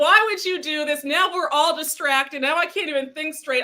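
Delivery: talking while cracking up, laughing through the words. Reacting to a viewer's joke in the chat, laughing while talking. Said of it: "I can't stop laughing".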